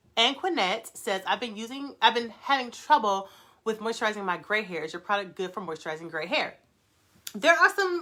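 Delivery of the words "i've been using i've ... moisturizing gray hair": usual speaking voice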